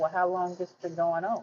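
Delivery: plain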